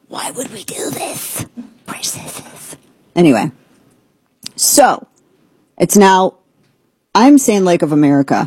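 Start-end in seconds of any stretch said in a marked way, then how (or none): 0.1-2.7 very soft, close, breathy whisper. Radio host, speaking of the audience and themself, slips into a Gollum voice. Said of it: "I feel like I'm talking like Gollum".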